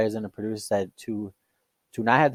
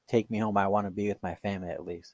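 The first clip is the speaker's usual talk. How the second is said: mock crying, much quieter; 7 dB quieter than usual. Retelling what an older lady said in her last moment, imitating her crying. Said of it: "she's like crying".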